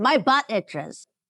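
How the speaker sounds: loud, high, blurted-out delivery. Voicing a character in a zone of truth: loud voice. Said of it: "she just loudly says".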